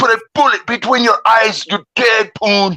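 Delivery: acted-out shrill, furious, enraged scream, very high. Retelling a man screaming threats into his phone: imitating someone screaming. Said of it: "He was screaming".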